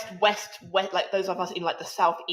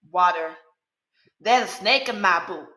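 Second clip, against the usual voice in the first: put-on American Southern accent, louder; 4 dB louder than usual. Trying a southern accent after it is praised: put-on southern accent. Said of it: "Y'all do with ease".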